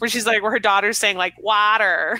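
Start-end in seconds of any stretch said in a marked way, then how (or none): 1.4-2.2 put-on the word water said in an American accent. Retelling a story about a child's accent, imitating an American accent. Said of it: "She does the American accent".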